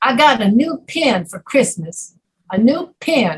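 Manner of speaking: put-on Southern drawl with long drawn vowels. Teaching southern versus northern pronunciation, saying an example in a southern drawl. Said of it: "the Southern accent is like a drawl".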